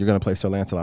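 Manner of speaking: normal talking voice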